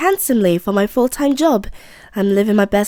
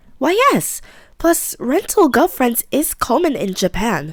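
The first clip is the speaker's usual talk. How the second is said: put-on light touch of a British accent, slight British tone; 3 semitones higher than usual. Playing a rental girlfriend character answering a question, with a slight British tone. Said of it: "I gave her a slight British tone".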